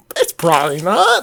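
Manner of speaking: unconfident, self-doubting, hedging tone. Answering a co-host's question about heading back, voice going high. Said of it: "Your voice got real high when you said that".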